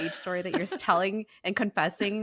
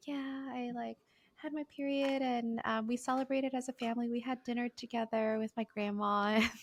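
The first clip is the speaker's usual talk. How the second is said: put-on precious, soft, gentle, soft-spoken girl's voice; 4 semitones higher, 6 dB quieter than usual. Describing one girl's precious persona, imitating a soft-spoken girl. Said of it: "a very soft spoken um, voice".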